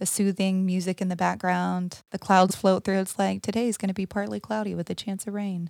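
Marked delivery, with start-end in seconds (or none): 3.4-5.7 flat, monotone, put-on weather forecaster voice. Describing old Weather Channel broadcasts to the other speaker; monotone Weather Channel voice. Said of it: "in this like monotone voice".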